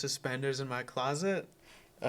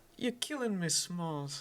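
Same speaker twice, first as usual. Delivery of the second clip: gangster-style mob boss voice; 6 semitones higher than usual. Asked to do a mafia impression, quoting a movie line as a mafia impression. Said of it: "Can you do a mafia impression?".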